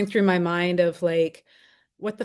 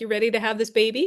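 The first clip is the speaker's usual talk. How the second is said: light, chirpy, cheerful, bright voice; 4 semitones higher than usual. Recalling the obstetrician on the hospital bed before breaking the water, mock-cheerful. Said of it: "he kind of says cheerfully".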